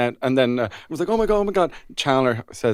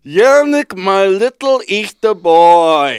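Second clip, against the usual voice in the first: put-on very loud, drawn-out drunk voice; 6 semitones higher, 10 dB louder than usual. Pretending to leave a voice note for Yannick: pretending to be drunk. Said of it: "a really drunk voice note".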